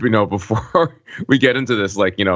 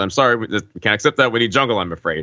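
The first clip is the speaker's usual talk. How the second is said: plain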